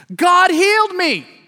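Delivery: very high exclamation shouted from the top of the lungs. Retelling how he exclaimed on waking from a nap: imitating a shout at top of lungs. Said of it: "exclaim at the top of his lungs".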